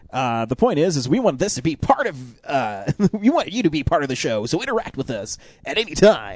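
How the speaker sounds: put-on radio announcer voice. Host inviting listeners to interact with the show, in a radio voice. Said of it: "That was my radio voice".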